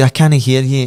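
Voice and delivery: plain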